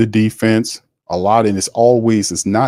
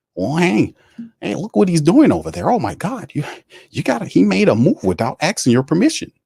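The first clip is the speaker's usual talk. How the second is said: high, swooping, wide-swinging jealous cartoon voice; 8 semitones higher than usual. Telling a story about Tom Benson and the team, put-on jealous Mickey voice. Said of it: "He channeled his inner jealous Mickey voice".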